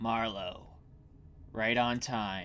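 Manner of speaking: soft, low growling. Narrator voices Hoffman, who sees Marlowe approaching, growling out the words. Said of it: "he growls out the words".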